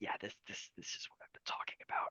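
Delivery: soft, hushed whisper. Voicing Scraps leaning in to the two of you: whispering. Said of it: "whispers to, to the two of you".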